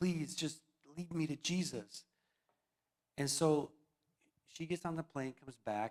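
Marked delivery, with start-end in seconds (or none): 0.0-2.0 put-on male crying voice, tearful, slower. Retelling a man crying on the phone to the speaker, imitating a man crying. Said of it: "he's like crying on the phone".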